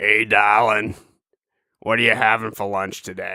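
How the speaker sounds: put-on hoarse talking-horse voice. Imagining how the horse would talk, in a hoarse horse voice. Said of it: "this one has a hoarse voice".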